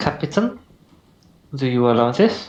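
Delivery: put-on Spanish accent. Asking the captain for permission in character: Spanish accent. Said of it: "I'm trying to do a Spanish accent".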